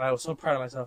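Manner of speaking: ordinary talk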